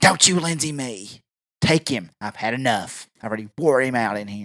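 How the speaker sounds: eerie, possessed-sounding demonic voice, unlike normal voice. Retelling a woman's words during a confrontation, imitating Exorcist possessed voice. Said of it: "it's like the Exorcist is taking over her body. It's like a different voice".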